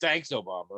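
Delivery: scornful, sneering, contemptuous delivery. Retelling the reply said to anything that happens: imitating a disdainful tone. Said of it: "with the same disdain in our voice".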